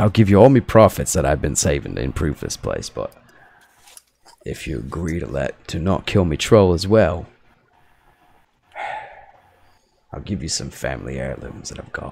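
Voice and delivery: grudging, unhappy, reluctant voice. Voicing a character who offers all his profits to the players: unhappy, reluctant character voice. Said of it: "he looks down at the ground like he's super unhappy about it".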